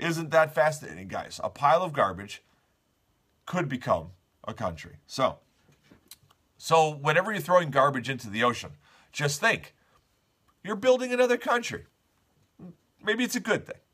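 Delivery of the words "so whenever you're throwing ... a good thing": ironic, tongue-in-cheek, rattled-off sarcastic delivery. Presenting a news story to the audience, sarcastic. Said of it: "That was sarcasm".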